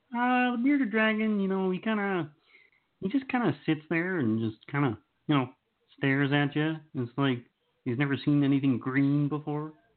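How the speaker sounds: high frog puppet voice. Pretending to be Kermit the Frog answering an interview host: Kermit the Frog voice. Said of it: "Just giving you my Kermit impression".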